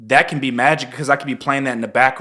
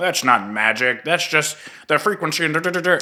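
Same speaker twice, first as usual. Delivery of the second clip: put-on nerdy science voice; 3 semitones higher than usual. Explaining how a materialist sees things, in a nerdy science voice. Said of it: "that's my like nerd science voice that I'm using".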